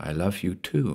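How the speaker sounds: tired, weary, hushed half-whisper, barely there. Margot answers Paul's desperate plea: half-whispered wearily. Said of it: "she whispered wearily".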